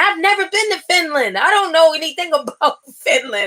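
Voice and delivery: high-pitched, protesting yell. Acting out what a group of people yelled in an argument; imitating people yelling. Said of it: "And they're like yelling".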